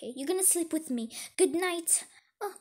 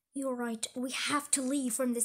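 ordinary delivery

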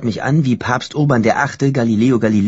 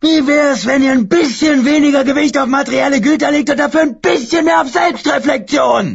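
put-on very high, shrill, roaring, bellowing drunken rant; 4 dB louder than usual. Narrator reads a man's line as he stands on his chair, roaring.

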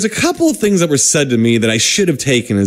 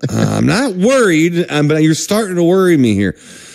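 ordinary talk, nothing marked

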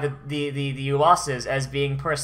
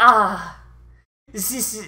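high, put-on German accent, declamatory speech-making style; 6 semitones higher, 4 dB louder than usual. Acting out a villain's speech, slipping into a German accent. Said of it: "I was doing a German accent".

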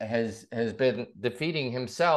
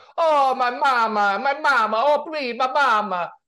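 exaggerated, over-the-top Italian accent, very high-pitched; 12 semitones higher, 5 dB louder than usual. Telling the interviewer what they love on the show, [name]'s over-the-top Italian accent. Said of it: "over the top with that Italian accent".

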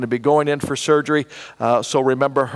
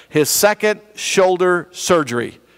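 slow, careful delivery, pitched up; 5 semitones higher than usual. Speaker slows down so a hard-to-say phrase won't come out badly: slow, careful delivery. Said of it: "I got to say this slowly or it comes out badly".

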